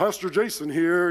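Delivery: put-on Southern preacher voice. Answering a ringing phone in his best Southern Baptist preacher voice. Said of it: "in my best like Southern Baptist preacher voice".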